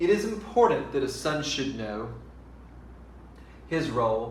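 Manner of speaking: stops right after the word know, then continues. Reading a poem aloud the wrong way, with a pause after know. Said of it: "I'm going to pause at the end of every line".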